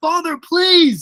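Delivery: anguished, desperate pleading cry, pitched way up. Retelling a film scene where Luke calls to his father, acting out Luke's plea. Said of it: "he pleads for his father to help".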